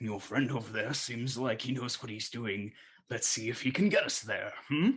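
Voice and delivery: voice of a dying man at death's door. Voicing a man near death who leans on a player: voice of a dying man. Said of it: "On the verge, verge of death".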